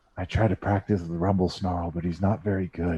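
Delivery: quiet half-whispered aside. A game narrator voices a character half-whispering to a player. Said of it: "he whispers to you".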